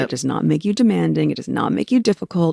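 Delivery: ordinary delivery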